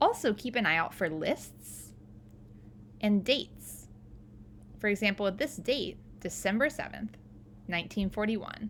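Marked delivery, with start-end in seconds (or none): 6.2-8.7 pause just before nineteen in nineteen forty-one. Showing where a comma goes in a date: pause before the year. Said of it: "you notice I paused before I said the year".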